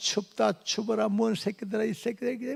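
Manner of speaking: high, husky, hoarse voice.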